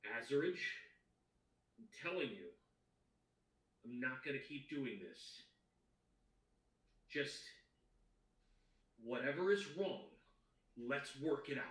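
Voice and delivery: irritated, angry male voice. Narrating to players, voice the man heard behind the door: angry male voice. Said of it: "an angry male voice say".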